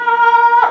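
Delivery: high, loud cockatoo-like screech.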